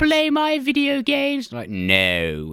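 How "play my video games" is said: put-on very slow, very high, loud, drawn-out British kid voice. Mocking the British main character of a new Home Alone film, mock British accent. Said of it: "They're British".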